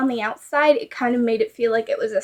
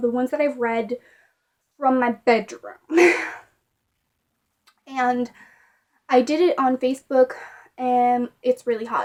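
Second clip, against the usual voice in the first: out of breath, breathing heavily. Speaker in a hot room talks about reading on facebook, breathing hard. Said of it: "That's why I'm breathing hard".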